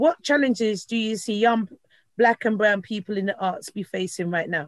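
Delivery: ordinary delivery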